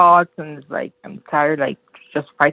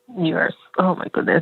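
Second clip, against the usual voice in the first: crying, tearful outburst, speaking through tears. Reacting to a reading that feels true to their whole life, crying. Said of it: "I'm literally crying right now".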